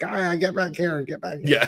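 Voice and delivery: high, put-on calling voice. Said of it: "she's like".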